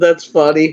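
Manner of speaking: giggly speech broken by laughter. Apologizing for laughing at the other speaker's story: laughing while talking. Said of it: "I don't mean to be laughing like this".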